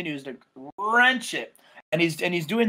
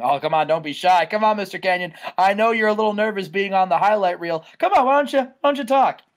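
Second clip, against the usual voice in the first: taunting tone. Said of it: "he doesn't say anything".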